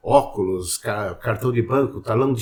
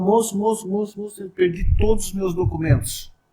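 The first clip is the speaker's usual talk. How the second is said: crying woman, high, tearful pleading voice; 9 semitones higher than usual. Retelling how a woman ran up crying about lost documents: imitating a crying woman. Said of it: "e chorando assim e tal".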